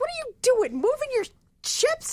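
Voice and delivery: very high, swooping, exasperated acted-out outburst. Retelling a Battleship game that Melanie was losing: imitating Melanie's frustration. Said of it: "in frustration".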